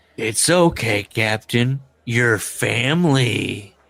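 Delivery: very slow, dry, sarcastic drawl. Retelling a remark to a captain about pay: imitating a sarcastic remark.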